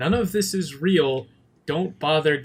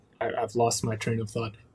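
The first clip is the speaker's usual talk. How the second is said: usual speaking voice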